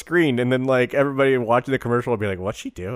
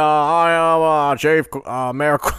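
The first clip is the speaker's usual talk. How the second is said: put-on Boston accent, higher and louder; 4 semitones higher, 4 dB louder than usual. Attempting a Simpsons mayor character while the other speaker laughs: Mayor Quimby voice. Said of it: "Are you doing J F K now?".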